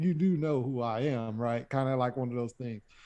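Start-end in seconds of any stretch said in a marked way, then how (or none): 0.0-1.7 slow, smooth, drawn-out sarcastic drawl. Retelling how Penguin answers Batman's interrogation: imitating Penguin being sarcastic. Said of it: "kinda like he's being sarcastic with it".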